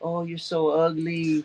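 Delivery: put-on high, slow, sweet, nice baby talk. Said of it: "as long as you do it in the right tone".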